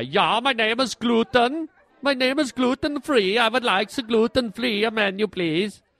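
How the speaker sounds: put-on Dutch-accented man's voice. Speaker imagining the gluten-free menu category as a Dutch guy: Dutch accent. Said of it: "sounds like a Dutch guy".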